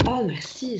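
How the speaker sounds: openly touched, warm, grateful, thankful tone. Demonstrating how to receive a compliment and say thanks, sounding grateful. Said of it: "je suis en ouverture, j'ai reçu et je te dis ce que je ressens à ce moment-là. Je ressens de la gratitude".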